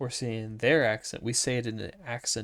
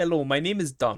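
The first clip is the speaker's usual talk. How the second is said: Russian-accented English; 4 semitones higher, 3 dB louder than usual. Joking about names on a podcast, introducing a name in a Russian accent. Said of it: "say in a Russian accent".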